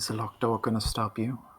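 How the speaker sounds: soft, in-character stage half-whisper. Playing Nina, asking another character about a locked door: half-whispering in character. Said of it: "Nina whispers".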